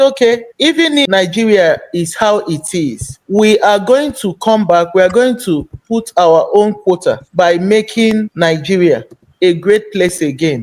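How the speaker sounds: ordinary talk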